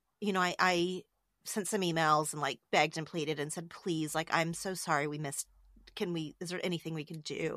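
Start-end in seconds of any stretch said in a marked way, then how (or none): none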